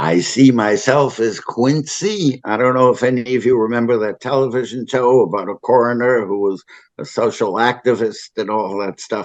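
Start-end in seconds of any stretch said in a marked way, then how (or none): 0.0-2.4 put-on exquisite French accent, very slow. Retelling what a man said after making you a deputy coroner, use an exquisite french accent. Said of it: "with this exquisite French accent".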